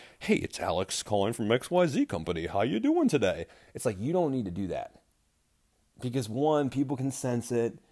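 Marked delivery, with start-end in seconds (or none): 0.2-3.5 put-on, fake, sing-song telephone voice. Showing how people suddenly change voice when calling from a company: put-on phone voice. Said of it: "all of a sudden they get this totally new voice".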